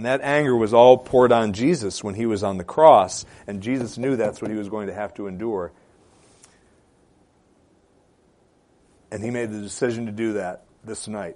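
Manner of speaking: voice catching, choked up, close to cracking. Speaker teaching on a passage about jesus enduring the cross, choking up. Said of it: "sorry for choking up there".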